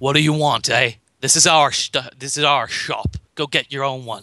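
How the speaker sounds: snarled, growling street-tough thug voice. A storyteller voices a sword-holding man at his shop, growling and snarling. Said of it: "he growls and slightly snarls".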